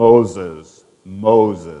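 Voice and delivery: deep, booming radio voice, low and drawn out. Retelling how Moses hears a voice calling his name: God's FM radio voice. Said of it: "he hears this FM radio voice".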